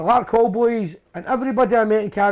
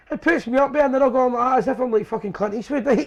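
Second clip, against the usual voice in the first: usual speaking voice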